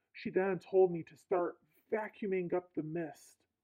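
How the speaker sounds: normal talking voice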